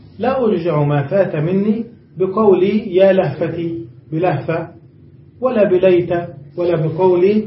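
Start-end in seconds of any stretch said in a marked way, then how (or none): none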